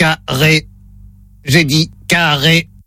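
low, flat, mechanical robot voice. During a word-repeat test sketch, the speaker plays the robot in a robot voice. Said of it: "Voix de robot enclenchée".

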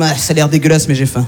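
low, mock male voice with a lecherous tone.

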